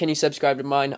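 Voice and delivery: plain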